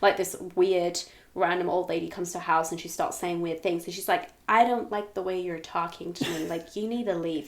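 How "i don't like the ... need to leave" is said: polite but firm put-on American accent. Acting out a character telling an odd visitor to leave: put-on American accent. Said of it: "your American accent is insane".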